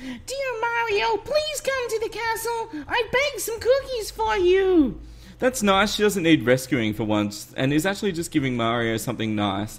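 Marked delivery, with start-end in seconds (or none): 0.0-5.0 very high, sweet and slow. Doing a line to Mario in a high sweet Princess Peach voice. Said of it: "Princess Peach's voice".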